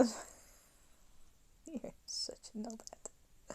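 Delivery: slow, soft, teasing whisper.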